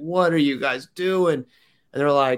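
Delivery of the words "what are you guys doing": play-acted, mild, light stand-in for a scream. Retelling screaming at officials at the back of the race: retelling own scream. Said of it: "screaming at them".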